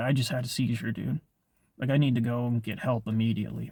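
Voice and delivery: normal talking voice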